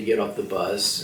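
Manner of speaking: usual speaking voice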